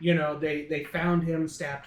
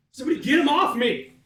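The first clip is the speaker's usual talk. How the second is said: very high, shrill, loud yelling; 9 semitones higher, 7 dB louder than usual. Playing a character pinned under a dead body, yelling in character. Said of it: "I'm just yelling it".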